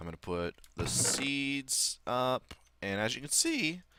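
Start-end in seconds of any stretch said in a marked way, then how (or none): 2.8-3.8 voice breaking, higher pitch. Showing the viewers something in the game: voice cracking. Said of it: "I don't know why my voice broke there".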